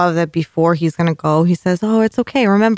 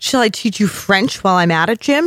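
mock, openly incredulous, disbelieving tone. Retelling a character's retort in a scene, mock-incredulous. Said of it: "he says it like he's so incredulous".

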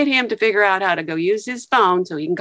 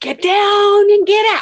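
put-on very high, drawn-out shout; 11 semitones higher, 5 dB louder than usual. Retelling when shooting started near Macy's, warning the people there: retelling a yell. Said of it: "I start yelling".

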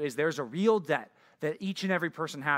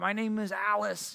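put-on high little old lady voice; 5 semitones higher than usual. Describing anti-scammers who keep scammers on the phone; imitating a little old lady. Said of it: "they act like a little old lady".

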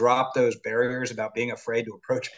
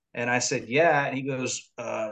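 plain

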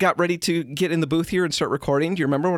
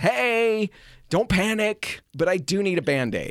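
slow, held-back, mild calling out, put-on; 2 semitones higher than usual. The speaker acts out calling to the kids, retelling a yell. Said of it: "So I'm yelling for the kids".

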